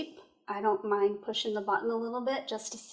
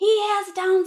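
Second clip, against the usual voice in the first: put-on shrill, very high, very loud child's yell; 10 semitones higher, 10 dB louder than usual. A mother retells her daughter shouting to her from the back, retelling the yell. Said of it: "she's yelling at me".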